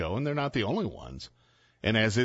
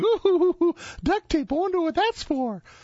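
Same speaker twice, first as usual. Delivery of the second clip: mock half-laughing, suggestive, very high, loud giggly tease; 6 dB louder than usual. Speaker retelling how some women reacted to the duct tape, retelling women half-laughing. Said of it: "kind of laughing, going".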